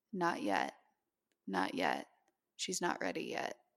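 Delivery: steady, very calm, settling, grounding voice. Retelling a woman's words heard during sleep paralysis: imitating a very calm, grounding voice. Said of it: "in a very calm and grounding voice".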